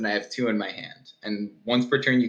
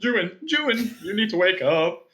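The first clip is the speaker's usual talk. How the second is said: higher, slightly scared put-on character voice; 8 semitones higher than usual. Voicing a scared character shaking a sleeping friend awake: [name]'s character voice. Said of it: "I need to do the voice".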